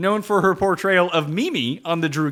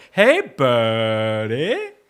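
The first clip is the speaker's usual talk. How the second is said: very low California stoner drawl, "buddy" stretched out; 8 semitones lower than usual. Imitating another speaker's Pauly Shore impression: Pauly Shore stoner California voice. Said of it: "stoner California voice".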